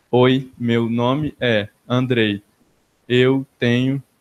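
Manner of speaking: very slow, flat, mechanical robotic monotone. Illustrating monotonal speech with a self-introduction, flat robotic monotone. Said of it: "Quando a pessoa fala meio robotizada".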